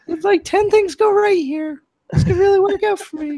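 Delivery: voice shooting way up, very high-pitched. Talking through a possible baseball trade, voicing the tempted inner voice, high-pitched. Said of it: "my voice gets so high".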